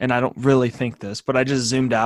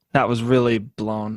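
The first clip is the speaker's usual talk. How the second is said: plain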